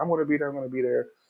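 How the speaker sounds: high, harried, hurried delivery. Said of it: "He's like".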